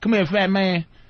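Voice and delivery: put-on country accent, put on. Retelling five inmates calling someone over: imitating a country accent. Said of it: "they were like country".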